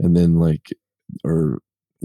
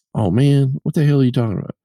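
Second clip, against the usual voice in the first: fed-up, irritated, high, angry voice, acted out; 8 semitones higher than usual. Retelling a friend's reply to a request to sound more southern: imitating someone getting mad. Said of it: "he got so mad".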